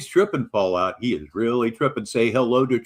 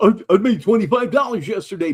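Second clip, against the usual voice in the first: loud, puffed-up, boastful showing off; 9 semitones higher, 4 dB louder than usual. Mocking a listener's boasts about money: imitating someone bragging. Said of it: "you brag on".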